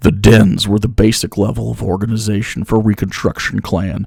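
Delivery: very low, solemn, grave, dead serious voice. Speaker reads a passage aloud in the most serious voice possible. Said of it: "I'm gonna read this in the most serious voice I can".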